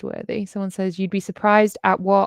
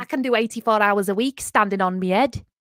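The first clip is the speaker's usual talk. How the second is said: best-effort put-on Liverpool Scouse accent. Repeating someone's claim about working long weeks, in a put-on Liverpool accent. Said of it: "That's my best uh, Liverpool Liverpool accent".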